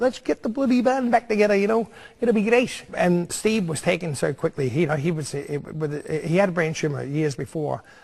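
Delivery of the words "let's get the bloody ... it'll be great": put-on coaxing, pitched-up Liverpool Scouse accent. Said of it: "his Scouse accent".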